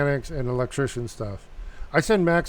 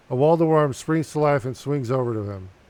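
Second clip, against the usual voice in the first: ordinary talk, nothing marked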